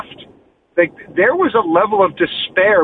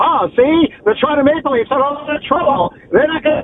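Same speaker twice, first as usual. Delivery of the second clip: put-on old-timey 1920s voice, much higher; 7 semitones higher than usual. Speaking to the guys, offering to go old school: 1920s old-timey voice. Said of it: "Do you want me to do like a 1920s voice?".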